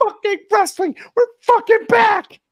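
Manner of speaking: shrill, very loud, high-pitched yelling. Riffing on TNA Wrestling, imitating Scott D'Amore shouting. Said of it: "he just starts shouting".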